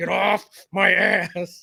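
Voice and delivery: very slow, creaky, rough raging voice. Retelling how a friend snaps at tailgaters: imitating Fro's road-rage line. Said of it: "Fro's famous line".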